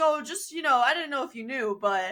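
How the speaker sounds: play-acted breezy, unbothered, nonchalant offhand tone. Retelling what Deacon says about being a Nazi vampire: imitating Deacon, nonchalant. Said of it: "so nonchalant about it".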